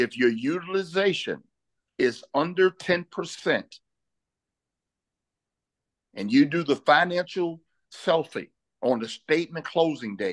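slow, measured, deliberate, word by word. Explaining credit utilization, repeating a point in a slow, deliberate delivery. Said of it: "Let me say that slow".

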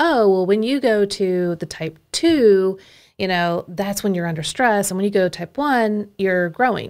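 ordinary talk, nothing marked

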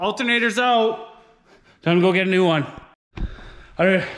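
out of breath. Right after finally getting a stuck bolt out, out of breath. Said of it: "I'm out of breath".

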